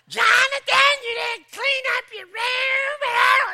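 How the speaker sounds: put-on, very high, very loud, shrill scolding yell. Retelling how a mother yelled at her son in the backyard, imitating a mother scolding. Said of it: "It's like, ooh, just like I couldn't even".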